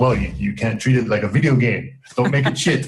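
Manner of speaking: put-on French accent. Retelling advice a man gave about mixing, quoting him in his french accent. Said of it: "And with his French accent".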